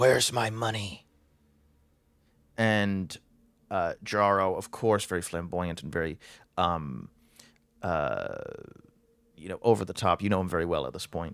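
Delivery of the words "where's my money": very raspy, rough, hoarse voice. Describing an overheard back-and-forth conversation, one voice speaks: very raspy voice. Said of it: "in this very raspy voice says".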